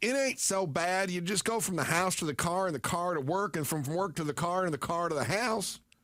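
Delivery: put-on sweet, goofy Southern Illinois accent with Tennessee, Arkansas tinges. Retelling what the crazy mother-in-law said when first meeting her, Southern Illinois accent. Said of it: "a sweet Tennessee accent plus an Arkansas goofy".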